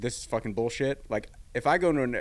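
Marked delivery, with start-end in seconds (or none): none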